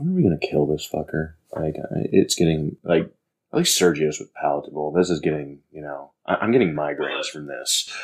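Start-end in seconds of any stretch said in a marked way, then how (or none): 0.0-1.3 speaking in a whisper. Speaking in character, nudging another character and whispering to her: whispering. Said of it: "just whisper to her".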